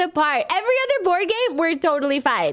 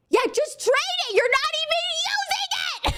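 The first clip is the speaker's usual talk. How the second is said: very high, pushy shouting; 11 semitones higher, 3 dB quieter than usual. Retelling how everyone yelled during a board game: imitating family yelling. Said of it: "That was the tone of voice being thrown at me".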